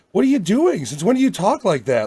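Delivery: pitch riding around in disbelief. Retelling a line from a movie trailer: Vince Vaughn tone. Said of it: "in that Vince Vaughn kinda tone".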